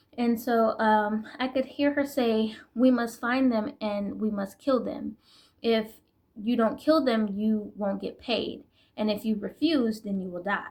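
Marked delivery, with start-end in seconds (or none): none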